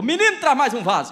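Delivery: loud high-pitched shouting. Retelling a story where a woman calls to a boy: imitating a woman shouting. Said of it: "ela gritou".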